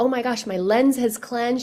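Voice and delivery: normal talking voice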